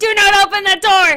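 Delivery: very high-pitched, very loud shrill yelling. Speaker starting their video calls out to Lee, yelling. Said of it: "I'm yelling right now".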